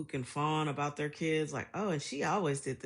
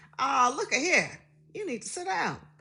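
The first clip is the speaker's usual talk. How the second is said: put-on very high, thick, super country Alabama accent; 10 semitones higher, 6 dB louder than usual. Retelling how their Alabama-born mom talked when comfortable: imitating mom's super country accent. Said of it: "when she was comfortable, she was super country".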